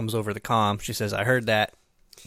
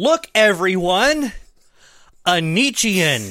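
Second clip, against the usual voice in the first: high, loud, drawn-out shock and surprise; 9 semitones higher, 8 dB louder than usual. Imitating a character's reaction as a newcomer comes aboard: mock total shock and surprise. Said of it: "total shock and surprise".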